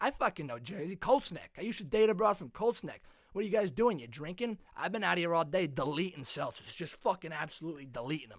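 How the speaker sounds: fully mastered put-on Massachusetts man's accent. Retelling meeting a guy at a Massachusetts beach house, imitating a Massachusetts guy's accent. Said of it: "I just mastered the guy's accent".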